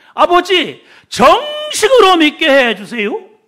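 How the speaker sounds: put-on regional Jeolla dialect accent. Retelling an old woman's prayer at church, imitating Jeolla dialect. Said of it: "전라도 사투리를 쓰면서".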